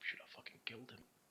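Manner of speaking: hushed, breathy, whispered muttering. Describing the barkeep going back to the bar: imitating someone muttering.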